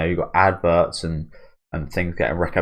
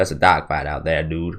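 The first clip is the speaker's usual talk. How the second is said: put-on American accent. Trying again to say a phrase the american way, put-on american accent. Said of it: "I used to be quite good at saying that".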